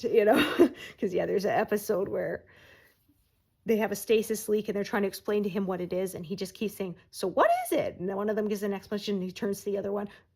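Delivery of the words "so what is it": very high put-on cat voice. Retelling a tv episode, the speaker quotes the cat character in a cat voice. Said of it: "say in a cat voice".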